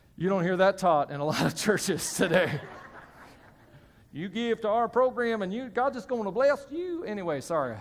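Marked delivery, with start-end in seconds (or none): 4.1-7.1 fake Southern accent, higher pitched. Mocking what some churches teach about giving: put-on Southern accent. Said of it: "I don't know why I got Southern on that".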